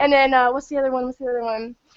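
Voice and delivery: ordinary delivery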